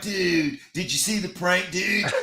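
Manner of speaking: put-on bro-ish frat boy dude voice. Arguing about mimicking someone, then imitating a frat boy voice. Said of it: "the voice is something like".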